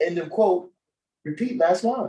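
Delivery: self-assured, charismatic speechmaking style. Retelling a speech read off a prompter, imitating a confident speech delivery. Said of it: "he said it with charisma like that".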